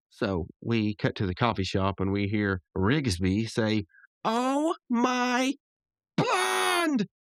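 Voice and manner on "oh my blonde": very high, short, squeaked-out cry. Describing a cartoon scene where a character reacts off-screen, retelling Rigby's loud exclamation. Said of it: "not that loud".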